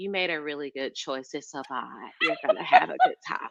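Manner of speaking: soft, low, laid-back voice.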